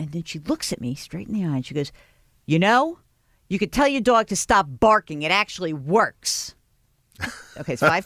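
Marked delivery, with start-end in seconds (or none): 2.4-6.5 play-acted cranky, surly woman's voice. Retelling what the dog owner snapped, imitating a surly woman. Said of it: "this surly lady".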